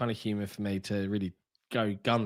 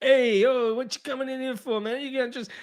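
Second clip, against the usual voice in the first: put-on loud, high New York accent; 7 dB louder than usual. Imitating game characters, New York construction guys: stereotypical New Yorker accent. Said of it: "very stereotypical New Yorker accent".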